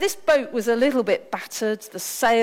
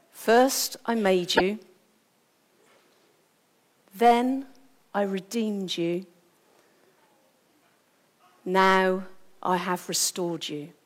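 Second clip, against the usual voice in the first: put-on quiet whisper under the breath; 3 semitones lower than usual. Retelling what a man said while restoring a boat: imitating a quiet whisper. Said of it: "whispering really quietly under his breath".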